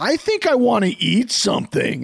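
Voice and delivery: imitated loud child's voice. Retelling a son talking first thing in the morning: imitating Fitz's loud morning voice. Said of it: "He has no bedroom level voice".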